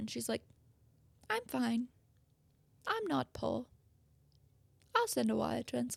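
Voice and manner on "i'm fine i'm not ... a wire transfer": creaky, crackling, rasping, rough-edged voice. Retelling what a woman said about paying, imitating Anna Delvey's voice. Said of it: "I hate the voice you do".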